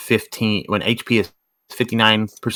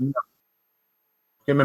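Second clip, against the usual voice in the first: chewing while talking, higher and quieter; 5 semitones higher, 4 dB quieter than usual. Answering another player who calls their turn, talking with mouth full. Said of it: "I got a cheesy biscuit in my mouth".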